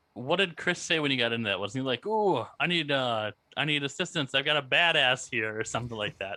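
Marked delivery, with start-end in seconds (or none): 2.1-5.6 slow, taunting, sarcastic, mocking distress plea. Retelling what Chris said on getting in, imitating Chris's mocking tone. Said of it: "it was kinda mocking in the same tone".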